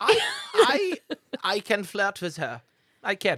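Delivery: put-on very high German accent. Playing a six-foot character in a tabletop game, using a very high German accent. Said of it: "He's 6 foot with a very high German accent. ... He's 6 foot with a very high German accent. ... I don't know how to do German accent".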